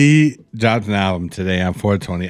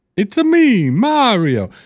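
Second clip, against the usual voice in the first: put-on very high pitch with Italian accent; 12 semitones higher than usual. On a podcast, asked to try an Italian accent, doing a Mario voice. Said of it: "try doing an Italian accent right now".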